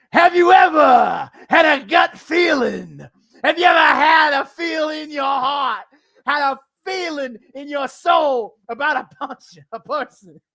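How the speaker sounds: loud, slow, big, belted put-on voice. Quoting his words and doing the voice, a Jimmy Valiant voice. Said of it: "I wanted to do the voice".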